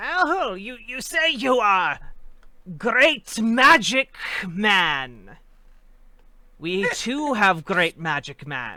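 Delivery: loud, rough, gravelly, high-pitched kobold creature voice. The narrator voices a kobold with a marble shield as it approaches: gravelly high kobold voice. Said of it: "with a, like kind of a uh, gravelly high voice".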